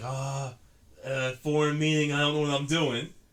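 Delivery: nervous, unsure, timid, faltering put-on voice. Retelling an ad about english classes: imitating a timid guy. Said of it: "it was like a timid, timid guy".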